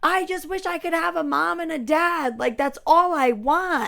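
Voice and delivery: weeping, high, tearful, screamed-out begging voice. Retelling a preview scene of someone screaming to her mom: imitating someone crying and screaming. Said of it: "she's crying in the car, screaming to her mom".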